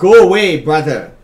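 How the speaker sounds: very loud, booming voice. Game narrator voicing a voice that booms inside the players' heads, loud booming voice. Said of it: "A loud voice booms in your head".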